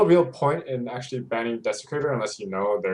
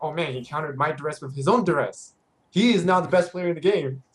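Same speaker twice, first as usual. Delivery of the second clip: cocky, boastful bragging tone; 4 semitones higher than usual. Retelling a scrim, imitating fifty after buying the duress. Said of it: "he's like".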